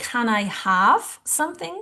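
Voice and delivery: ordinary delivery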